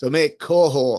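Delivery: playful, slow, high, loud Australian twang.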